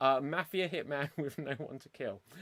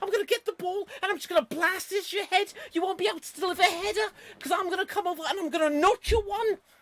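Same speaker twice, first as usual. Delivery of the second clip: put-on very high, loud Liverpool accent; 7 dB louder than usual. You play Steven Gerrard as a mafia hitman with no one to kill; high-pitched Steven Gerrard impression. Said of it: "destroying my throat going up that high".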